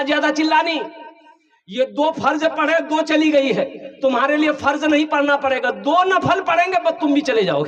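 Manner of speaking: mock cross, angry scolding outburst. Storyteller retelling what a man angrily said about a crying buffalo calf, retelling an angry outburst. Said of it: "गुस्सा से बोला".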